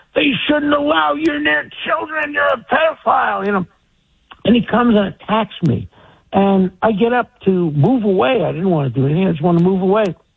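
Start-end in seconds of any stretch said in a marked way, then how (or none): 0.1-3.4 very high, shrill scream. Retelling how a man came over and attacked, imitating someone screaming. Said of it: "starts screaming at me".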